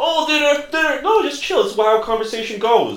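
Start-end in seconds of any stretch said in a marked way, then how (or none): 0.0-1.0 panicky, high-pitched babbling. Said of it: "Panicky little guests are".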